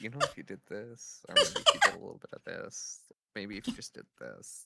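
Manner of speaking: quiet, hushed whisper, very close. Retelling past suggestions made during a live stream: imitating a quiet whisper. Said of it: "me quietly whispering in your ear".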